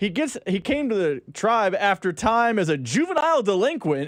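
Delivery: normal talking voice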